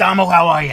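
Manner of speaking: put-on very loud, high-pitched New York accent. Retelling how a smoking New Yorker greeted someone: imitating Sharon, a New Yorker. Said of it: "she was this New Yorker".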